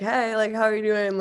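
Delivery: ordinary talk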